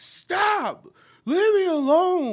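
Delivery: loud, high-pitched pleading yell.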